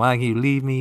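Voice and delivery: ordinary talk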